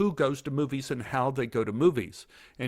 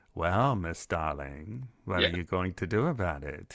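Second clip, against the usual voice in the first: very deep, low, creepy voice; 7 semitones lower than usual. Recalling a close-up in Silence of the Lambs: creepy Anthony Hopkins impression. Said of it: "it's enough to creep you out".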